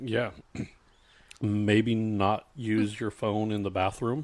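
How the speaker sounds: slow, pointed tone. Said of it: "And I'm like".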